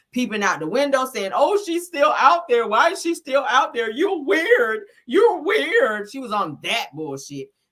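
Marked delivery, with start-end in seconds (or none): 1.3-6.1 acted fearful, nervous, high raised voice. Retelling someone peeping out the window: imitating someone acting scared. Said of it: "she was acting like she was scared".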